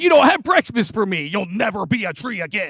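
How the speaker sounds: grouchy, put-out, very cranky scolding tone. Retelling the day Jesus destroyed a tree: imitating cranky Jesus. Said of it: "Jesus gets real cranky".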